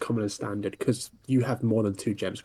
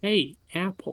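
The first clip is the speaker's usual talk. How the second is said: high, attempted, put-on North Dakota American accent; 9 semitones higher than usual. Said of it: "Was that an attempt at an American accent?".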